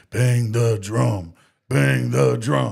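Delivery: rasping, loud, very drawn-out cry. Showing how the line will be said over the play: raspy voice. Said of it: "with this raspy voice".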